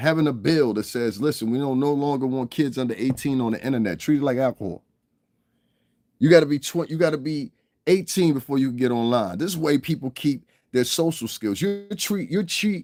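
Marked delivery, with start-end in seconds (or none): none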